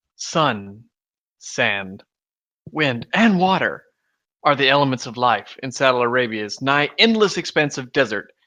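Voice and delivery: deliberately cheesy, hammy, lame actor delivery. Reading aloud a text that you were just sent, do a lame William Shatner impression. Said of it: "in the lame tradition of William Shatner".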